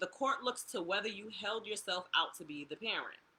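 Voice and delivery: ordinary talk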